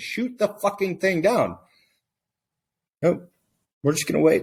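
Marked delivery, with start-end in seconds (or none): 0.0-1.6 mock, restrained screaming of a demanding crowd. Retelling what the entire country was screaming for days: imitating people screaming. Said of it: "people screaming".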